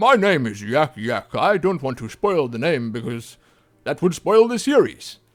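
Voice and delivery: loud, projected fantasy game creature voice. Showing the Tauren voice again, closer to the microphone: Tauren voice. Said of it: "doing the Tauren voices".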